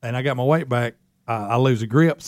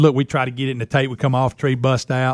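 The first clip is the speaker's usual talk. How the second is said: ordinary talk, nothing marked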